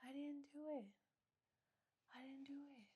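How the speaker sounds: very quiet, soft, hushed, gentle nice-guy voice. Describing a creepy man who is very nice, speaker imitates his soft voice. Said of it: "his voice is so soft".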